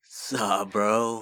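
put-on California accent. Asked what California sounds like in their head, imitated California accent. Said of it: "What does California sound like?".

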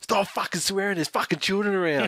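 imitated woman yelling. Retelling how a woman in front turned around and yelled at them: imitating a woman yelling. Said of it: "She turns around and yells, yells at us".

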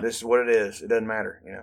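ordinary delivery

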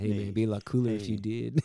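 put-on laid-back drawling accent. Joking about a band genre, saying the line in a Matthew McConaughey accent. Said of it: "you gotta do it in a Matthew McConaughey accent".

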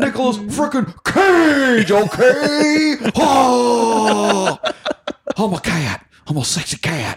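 high, loud, drawn-out drawl, "oh" stretched, pitched way up. Quoting a Community scene's impression: Nicolas Cage impression. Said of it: "Abed does his Nick Cage impression".

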